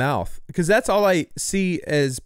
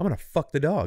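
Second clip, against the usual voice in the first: mock angry, furious, fed-up outburst; 4 dB quieter than usual. Acting out how the partner reacted after getting monkeypox: imitating a super pissed partner. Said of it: "his partner got super pissed and was like".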